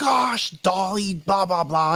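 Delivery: mock mellow voice, high and slow, mildly annoyed outburst. Retelling how a mellow friend talks when he gets mad: imitating a friend getting mad. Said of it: "when he gets mad, he'd be like".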